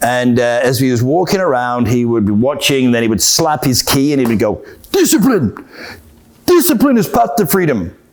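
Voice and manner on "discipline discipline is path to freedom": put-on, sing-song Korean accent. Retelling what the instructor called out while watching students in the dojang, in a Korean accent. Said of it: "It's about my best Korean accent".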